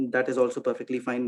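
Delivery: ordinary delivery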